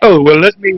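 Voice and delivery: mock-prissy voice and manner. Describing someone who acts prissy toward him, mocking them: mocking a prissy manner. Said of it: "acting all prissy and like".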